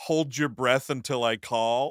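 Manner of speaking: ordinary talk, nothing marked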